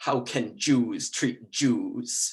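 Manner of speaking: slow, withering, scornful voice.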